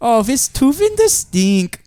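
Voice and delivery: put-on Finnish accent. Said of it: "do a Finnish accent".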